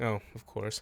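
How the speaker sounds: speaking very quietly. Retelling a character's reply to a date plan: imitating a character speaking very quietly. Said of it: "like, very quietly".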